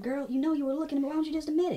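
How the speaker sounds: very high, terrible fake Southern accent. Accusing a girl of looking at them, terrible southern accent. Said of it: "Please stop that terrible, like, southern accent".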